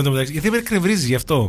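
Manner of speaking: usual speaking voice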